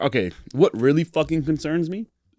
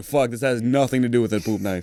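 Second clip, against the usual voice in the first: ordinary talk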